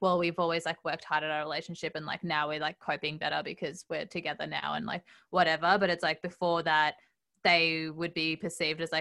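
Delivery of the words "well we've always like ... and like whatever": usual speaking voice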